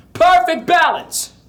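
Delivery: very high, full-volume ringing call. Demonstrating the practice phrase in a vocal exercise, loud. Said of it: "[Loud volume]".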